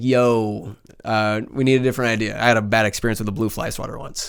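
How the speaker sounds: quiet, dead-serious, straight-faced deadpan delivery. Retelling how a client stopped the meeting, retelling a deadpan remark.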